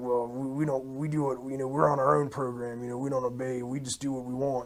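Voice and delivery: acted growling voice. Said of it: "they're growling and they're relishing".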